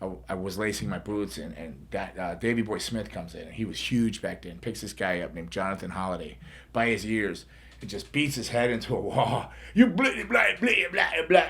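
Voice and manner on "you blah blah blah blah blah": put-on nonsense babbling in a high-pitched British accent. Retell the incomprehensible talk as he beat a guy's head into a wall, in Davey Boy Smith's British accent. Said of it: "in that British accent".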